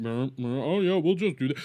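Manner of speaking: offhand, half-listening, distracted dismissive tone, acted out. Imitating someone reacting while scrolling a phone: imitating someone distracted and dismissive. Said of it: "He's scrolling his fucking phone and everything".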